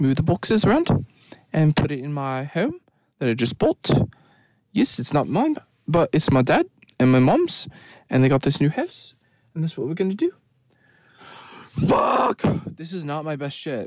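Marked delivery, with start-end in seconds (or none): 0.0-10.3 fast, put-on New Zealand accent. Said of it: "and then when you do Kiwi".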